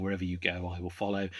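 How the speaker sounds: ordinary talk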